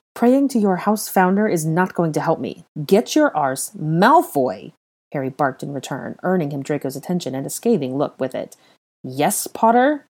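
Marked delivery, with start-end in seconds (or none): 9.0-9.9 impatient tone, pitched high. A man answers another who has just barked at him; impatient. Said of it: "He said impatiently".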